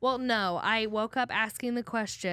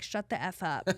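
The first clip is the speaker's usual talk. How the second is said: imitated muttering under breath, lower and quieter; 3 semitones lower, 5 dB quieter than usual. Retelling an irritable remark to mom: retelling a whisper under breath. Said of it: "under my breath whispered".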